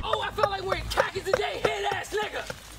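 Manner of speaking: combative, forceful, aggressive in-your-face delivery. Repeating the same line twice, with aggressive delivery. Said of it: "Why is he so fucking aggressive with it?".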